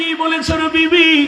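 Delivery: high, slow, stunned cry in disbelief.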